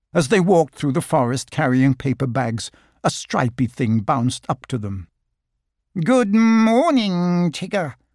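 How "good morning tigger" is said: anxious, uneasy, high-pitched nervous voice. Walking through the forest as a stripy creature bounces up: nervous greeting. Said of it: "said Piglet nervously".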